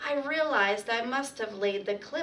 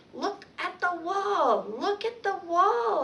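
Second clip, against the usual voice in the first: tiny, high, squeaky hamster-like peeping voice; 7 semitones higher than usual. First-person narrator calling out as Otto enters, in a squeaky hamster voice. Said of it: "I squeaked".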